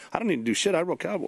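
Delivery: mock muttering under the breath. Retelling a reply to being asked to help with dishes: imitating someone muttering under breath. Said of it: "going under his breath".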